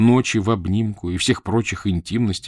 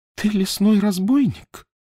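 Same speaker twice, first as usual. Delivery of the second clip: very high-pitched, quavering, trembling voice; 13 semitones higher than usual. A countess, facing a grey-bearded stranger, asks him a question: trembling voice. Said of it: "спросила графиня дрожащим голосом".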